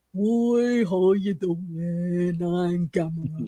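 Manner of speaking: crazy goofy cartoon turtle voice. Imagining Gamera speaking to kids: crazy Tutor the Turtle type voice. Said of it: "that sort of crazy Tutor the Turtle type voice".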